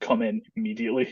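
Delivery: normal talking voice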